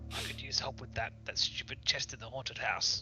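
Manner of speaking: quiet muttering under the breath. Speaking in character to Bjorn about a chest: under one's breath. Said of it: "I turn to Bjorn under my breath".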